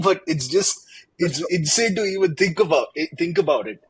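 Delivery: talking with laughter spilling through the words. Reacting to the idea of everything under one code base, laughing while talking. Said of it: "I'm sorry I'm laughing".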